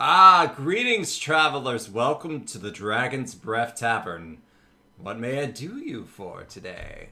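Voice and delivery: loud, burly tavern keeper voice. Voicing a tavern keeper greeting travelers in a game, burly tavern keeper voice. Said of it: "burly kind of human guy... he says".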